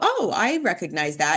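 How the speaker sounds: ordinary talk, nothing marked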